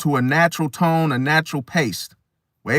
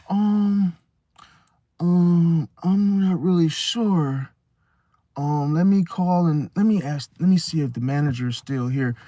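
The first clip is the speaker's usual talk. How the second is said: slow, hesitant, dragged-out umming. Acting out a store clerk stalling near closing time: imitating a stalling store clerk. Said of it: "They're trying to stall the clock".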